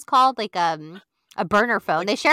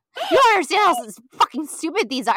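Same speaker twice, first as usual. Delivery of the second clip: imitated angry yell, pitched higher; 6 semitones higher, 3 dB louder than usual. Retelling a reality show scene, imitating Jax yelling. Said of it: "yelling at Brittany".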